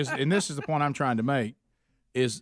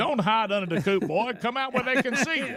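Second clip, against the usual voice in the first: put-on high cartoon barnyard-animal voice, pitched up; 8 semitones higher than usual. Voicing a cartoon rooster coming out of the chicken coop: Foghorn Leghorn voice. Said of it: "slipping into the Colonel a little bit".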